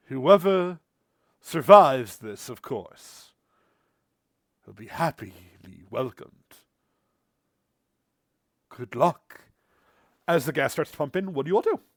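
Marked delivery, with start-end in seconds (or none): 0.1-9.4 loud, carrying voice, louder. Voicing a voice welcoming initiates to a hunter order: loud voice. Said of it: "you hear a loud voice".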